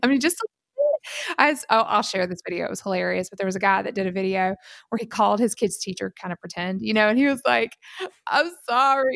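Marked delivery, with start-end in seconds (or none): 8.3-9.2 imitated crying voice. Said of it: "He's, like, crying".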